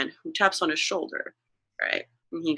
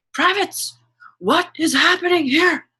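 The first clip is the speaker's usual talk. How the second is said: very high, loud drill-sergeant scream-talk; 12 semitones higher, 6 dB louder than usual. Voicing an upset officer breaking up a scene: drill sergeant scream-talking. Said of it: "but drill sergeant talking, so scream talking".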